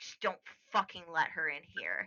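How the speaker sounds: low, soft, bitter, sighing mutter.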